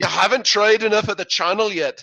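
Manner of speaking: clumsy fake Irish accent. Quoting an Irish-sounding inner voice: worst imitation of James Kennedy. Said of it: "that was the worst imitation of James Kennedy".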